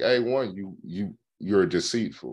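ordinary delivery

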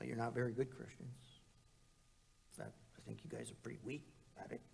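quick, hushed, contemptuous sneer. A speaker acting out an accuser's taunt aimed at Christians, mock-sneering. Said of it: "he sneers".

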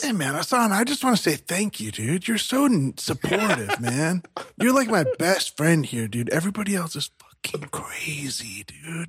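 very slow, drawn-out whispered aside. Thanking a coworker quietly during an office meeting: whispering. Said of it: "what did you just whisper into Hassan's ear?".

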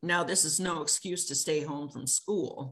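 plain

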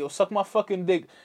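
confrontational, aggressive, hostile in-your-face taunting tone. Showing how an insult sounds said in a hostile way: aggressive. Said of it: "that has a lot of aggression behind it".

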